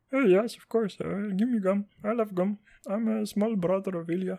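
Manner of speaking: put-on soft, light, hushed, high Arabic accent. Imitating a brother who is asked if he wants gum, imitating brother with Arabic accent. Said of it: "I don't know why I have an Arabic accent".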